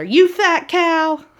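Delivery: play-acted, high-pitched yell. Telling a memory story where Peter Pan yells at Tinkerbell: Peter Pan yelling. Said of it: "So he's yelling at her".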